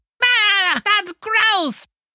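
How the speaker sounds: bad cartoon voice, pitched way up. Showing how the kids' SpongeBob reacts to boogers: SpongeBob voice. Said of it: "it's not a good SpongeBob".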